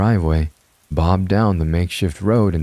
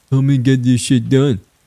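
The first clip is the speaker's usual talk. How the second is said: mocking, pitched-up voice; 7 semitones higher, 4 dB louder than usual. Following the narrator inside, he echoes their demand back at them in a mocking tone. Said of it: "he repeated in a mocking tone".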